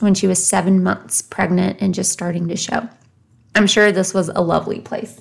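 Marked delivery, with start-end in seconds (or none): 3.5-5.2 dripping with sarcasm. Recounting a family story of a pregnant daughter sent away, very sarcastic. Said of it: "I'm being very sarcastic in saying that".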